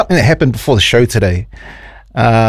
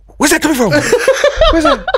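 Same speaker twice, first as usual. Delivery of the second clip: high, squealing, panicky mock voice. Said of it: "just Randy going".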